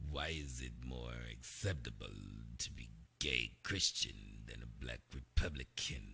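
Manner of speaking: deep, hushed genie voice, very low and slow. Asking a question, in a Wishmaster voice. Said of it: "In my Wishmaster voice".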